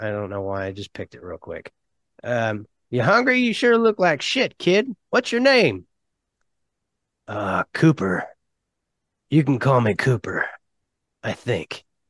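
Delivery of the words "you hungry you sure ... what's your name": put-on old man voice, high and swooping in pitch. Telling a story, voicing a man looking after a kid, in an old man voice. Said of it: "I'm using my old man voice".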